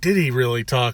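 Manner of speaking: usual speaking voice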